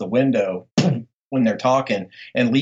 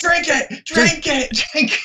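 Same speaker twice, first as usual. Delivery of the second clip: mock yelling in a bossy, authoritarian English accent. Retelling how the vampire yells at her, mock-yelling in an authoritarian English accent. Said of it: "yelling at her in his very authoritarian English accent".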